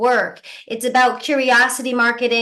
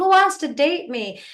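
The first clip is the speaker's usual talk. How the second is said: mock mild, high, pitched-up half yell; 5 semitones higher than usual. Describing a single guy going into a bar: imitating a guy screaming. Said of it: "just screaming at the top of his lungs".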